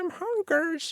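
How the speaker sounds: very high-pitched, soft whale cry. Imagining whales calling out for food, the speaker does a high-pitched whale voice. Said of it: "it's like a high pitch".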